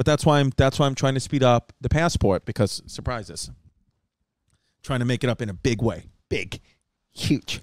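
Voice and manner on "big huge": breathy, whispered put-on voice, words breathed out softly. Joking about making up for it in a big way: Julia Roberts voice. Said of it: "Julia Roberts voice".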